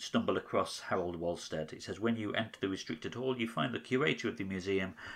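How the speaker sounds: plain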